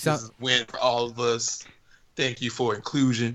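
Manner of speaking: mock soothing, smooth delivery. Imitating an actor's award acceptance speech: imitating Mahershala Ali's soothing voice. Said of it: "soothing voices".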